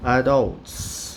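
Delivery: adults stressed on second syllable -dults. Teaching english vocabulary in portuguese: stress on 'dults' in adults. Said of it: "A sílaba tônica é a segunda".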